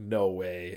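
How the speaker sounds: ordinary talk, nothing marked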